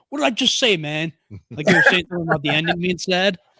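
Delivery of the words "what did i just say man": high, sarcastic, fake annoyed anger. Retelling another speaker's reply to a movie gif: imitating sarcastic mock anger. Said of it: "sarcastically got mad at me".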